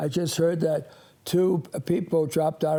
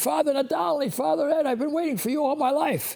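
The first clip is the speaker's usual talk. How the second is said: mock overjoyed, excited screaming, very high; 10 semitones higher than usual. Retelling a woman recognizing the speaker's voice, imitating yelling and screaming. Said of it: "she starts yelling and screaming".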